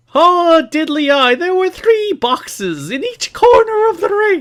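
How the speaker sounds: bad fake Irish accent, very high, laid on thick. Asked to explain the match rules in his thickest accent: bad Irish accent. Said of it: "Please say it in your thickest accent possible".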